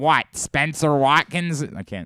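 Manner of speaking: put-on baseball announcer voice. Showing a Jerry Coleman impression after retelling a baseball call. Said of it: "That's your Jerry impression?".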